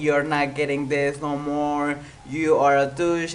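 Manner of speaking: ordinary talk, nothing marked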